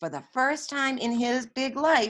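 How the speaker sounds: plain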